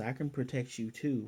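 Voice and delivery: ordinary delivery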